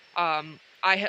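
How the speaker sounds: plain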